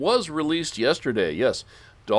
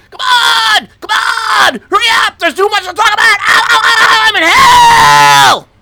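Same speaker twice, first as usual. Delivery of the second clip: shrieking yells, very high and very loud, ranting; 15 dB louder than usual. Counting down, then doing a Sam Kinison scream. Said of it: "Sam Kinison screams in three".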